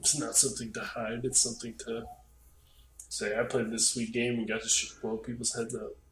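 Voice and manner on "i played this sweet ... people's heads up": ordinary talk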